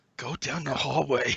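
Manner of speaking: spiteful, hateful hushed half-whisper. Voicing gears that tell the party where to go: hateful half-whisper. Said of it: "the gears hatefully whispering".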